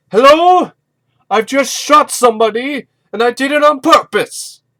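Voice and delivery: booming, very loud, shrill, high-pitched yell. Speaker retells a man shouting after he shoots someone: retelling a shout. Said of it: "And then he shouts".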